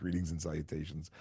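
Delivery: ordinary delivery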